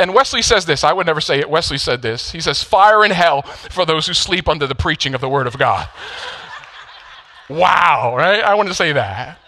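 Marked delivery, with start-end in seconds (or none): none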